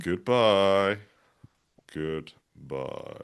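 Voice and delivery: horror voice. Saying goodbye while practicing a voice: horror voice. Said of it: "I'm practicing my horror voice".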